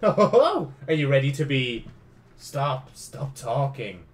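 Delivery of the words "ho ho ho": loud, pitched-up fake evil villain laugh. Reading a villain's line in a game: put-on evil laugh. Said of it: "It's my evil laugh".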